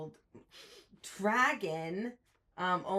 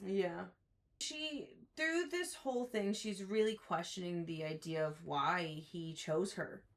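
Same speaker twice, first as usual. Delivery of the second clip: ordinary delivery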